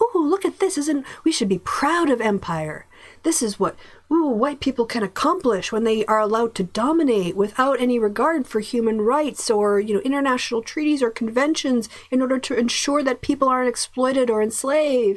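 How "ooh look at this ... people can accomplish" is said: put-on, sarcastic, gushing, cheerful pride, pitched up. Speaker mimicking how empire is made to sound fun, with mock cheerful pride. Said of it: "They make empire sound like it's a fun".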